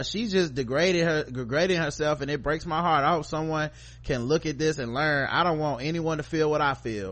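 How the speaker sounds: plain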